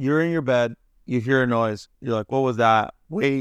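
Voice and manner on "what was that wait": voice cracking and breaking. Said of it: "my voice cracked again".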